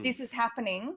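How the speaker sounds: plain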